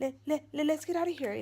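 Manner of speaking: high, scared, stuttering panic.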